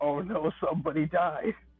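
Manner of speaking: sobbing, tearful voice full of despair. Voicing a character who grabs his head in tears: crying in despair. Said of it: "he's in tears".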